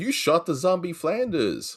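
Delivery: high cartoon voice with wide swooping pitch. Quoting a cartoon scene about a zombie: Homer Simpson impression. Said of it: "And he goes".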